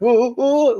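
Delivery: high, panicky, nervous oohs from the throat. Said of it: "throat is making that ... noise".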